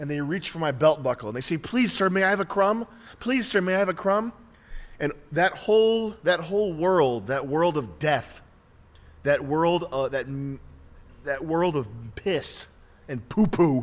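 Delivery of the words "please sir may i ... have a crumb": mock pitiful, groveling, high pleading tone. Describing poor people crawling up on hands and knees: imitating poor people begging. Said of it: "poor people crawl up to me on their hands and knees".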